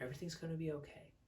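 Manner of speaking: soft, settled, calm and relaxed. Explaining how tone changes when relaxed, the speaker demonstrates a calm, relaxed tone. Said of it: "I'm relaxed".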